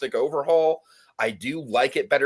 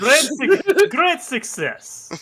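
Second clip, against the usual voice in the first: put-on Kazakh-style accent, higher and louder; 13 semitones higher, 6 dB louder than usual. Answering a remark that the line sounded like Borat: Borat voice. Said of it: "You sounded like Borat just there".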